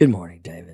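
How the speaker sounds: low, soft, reserved voice. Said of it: "Don't sound so reserved".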